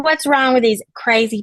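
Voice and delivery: put-on Scottish accent. Pretending to voice Justine's thoughts telepathically: imitating Justine's Scottish accent. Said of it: "you can't telepath her Scottish accent".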